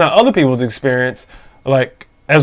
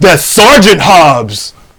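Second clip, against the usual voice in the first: acted-out yell, calling out loudly; 3 semitones higher, 6 dB louder than usual. Retelling an officer calling out as the speaker walked away: imitating someone yelling. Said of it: "he yells out".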